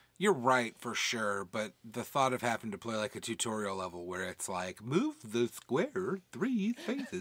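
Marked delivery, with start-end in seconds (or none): 4.9-7.2 slow, high-pitched, nerdy robotic voice. Mocking a tutorial level's instructions in a nerd robot voice. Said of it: "I like that voice".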